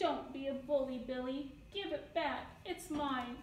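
ordinary delivery

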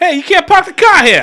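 shouted Boston accent, very loud and high. Asked who has the worst accent, showing off a Boston accent. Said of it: "It's Boston".

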